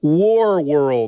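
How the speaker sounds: each word of War World said very slowly, drawn out. Describing an alien villain's group, saying war world very slowly. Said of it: "I have to say that very slowly".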